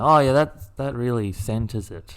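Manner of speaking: ordinary talk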